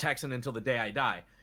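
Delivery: ordinary delivery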